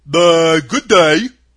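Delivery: hoarse scarecrow voice. Reading a story aloud, the scarecrow greets the girl in a husky scarecrow voice. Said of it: "said the scarecrow in a rather husky voice".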